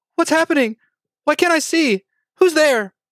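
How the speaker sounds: put-on small, very high young girl voice. Voicing a voice that a player hears in his mind: young girl voice. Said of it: "you hear the voice of a young girl say".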